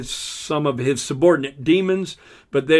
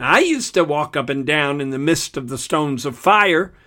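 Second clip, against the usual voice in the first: plain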